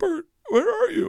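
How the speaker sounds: mock very high-pitched tearful sobbing cry. Retelling a crying sister calling with bad news: imitating someone crying. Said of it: "Now she's crying uncontrollably".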